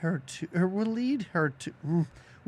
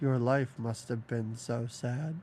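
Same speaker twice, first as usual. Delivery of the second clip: put-on very low, flat, emotionless deadpan; 8 semitones lower, 4 dB quieter than usual. Retelling a movie scene, quoting a woman's reply: imitating a deadpan delivery. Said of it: "this woman's deadpan delivery of".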